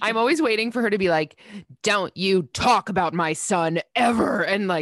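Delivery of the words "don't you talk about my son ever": slow, drawn-out, strong, cold, menacing voice. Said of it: "it becomes so strong and so scary".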